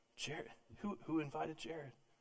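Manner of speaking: put-on muttered delivery. Telling a story, acting out a man muttering to his friends: retelling a mutter under breath. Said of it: "he's muttering under his breath to his friends".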